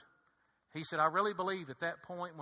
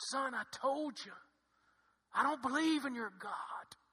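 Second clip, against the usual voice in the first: high, hoarse, rasping voice; 8 semitones higher than usual. Retelling what a father told his son, imitating a raspy voice. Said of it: "with a raspy voice".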